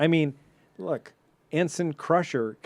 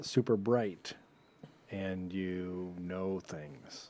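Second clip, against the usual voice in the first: eerie, weird, unsettling, creepy put-on voice; 8 semitones lower, 11 dB quieter than usual. Telling the other speaker why they could be an acting ensign, in a weird, creepy voice. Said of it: "that really weird, creepy voice you just said".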